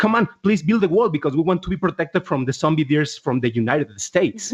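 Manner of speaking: ordinary delivery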